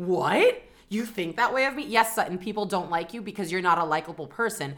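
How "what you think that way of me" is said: acted, offended, shocked disbelief. Mocking Sutton, who acts surprised when people dislike her: imitating Sutton acting shocked. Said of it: "she acts shocked all the time".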